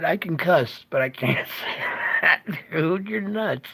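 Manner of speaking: words breaking up with laughter throughout. Reacting on air to what another person just said: laughing while talking. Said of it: "I'm sorry I'm laughing".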